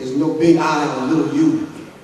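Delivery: ordinary talk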